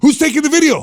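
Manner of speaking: shouting.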